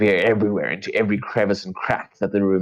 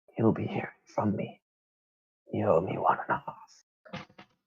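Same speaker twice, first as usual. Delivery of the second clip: feeble, weak, faint whisper, barely voiced; 8 dB quieter than usual. After a couple of weak sips, speak so only Hallow can hear, in a whisper. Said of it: "she whispers".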